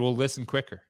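plain

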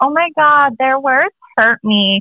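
fake, put-on Californian accent. Mocking people who act like babies, the speaker puts on a Californian-sounding voice. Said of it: "that sounded so Californian".

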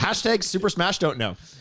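fast, run-together, rattled off in one go. Repeating another speaker's made-up hashtag back: said fast. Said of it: "when you said it fast like that".

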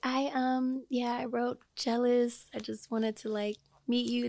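acted extra soft-spoken voice. Recalling meeting a big celebrity, speaker acts out their past self: extra soft-spoken. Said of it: "Where you get that voice from just now?".

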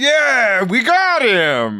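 very high, very slow, drawn-out, swooping excited voice. Asked what their excited voice is, the speaker demonstrates it: excited voice. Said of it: "I would be more like".

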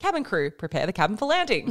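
ordinary delivery

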